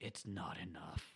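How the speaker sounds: deep voice, low and soft. Recapping a scene, the speaker quotes the Darkling in a deep Darkling voice. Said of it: "it's just like a deep voice".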